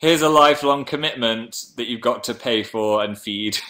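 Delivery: normal talking voice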